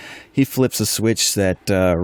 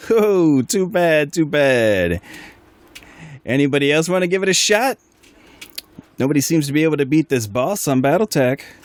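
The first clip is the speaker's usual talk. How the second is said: high-pitched, loud shout; 7 semitones higher than usual. Voicing Nico, who yells out to everyone from above: yelling. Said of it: "yell out".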